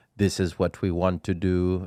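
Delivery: plain, straightforward, slow, deliberate, blunt delivery. Imitating how a straightforward official states his plans: Klaus Schwab impression. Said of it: "I know that's not how he talks, but that's kinda how he talks".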